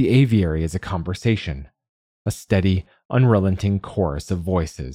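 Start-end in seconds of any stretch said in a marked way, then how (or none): none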